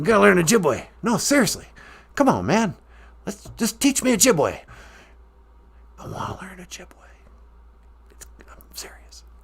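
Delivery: put-on whisper. Insisting to the host that he wants to learn Ojibwe: whispering Biden impression. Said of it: "quit whispering like that".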